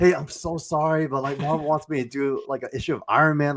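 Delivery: put-on high, awkward, apologetic voice. Speaker acts out his second phone call with the artist, retelling an awkward apology. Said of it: "second awkward phone call".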